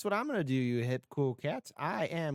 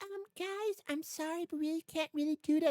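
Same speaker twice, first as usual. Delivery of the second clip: squeaky put-on voice, pitched way up, very high; 13 semitones higher than usual. Speaker imagines a colleague's reply, Jeanette from accounting impression. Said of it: "That's my that's my impression of you, Jeanette from accounting".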